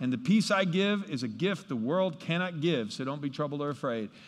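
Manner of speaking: ordinary talk, nothing marked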